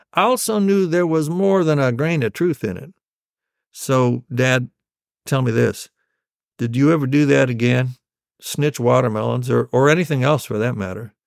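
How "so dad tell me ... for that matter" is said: ordinary talk, nothing marked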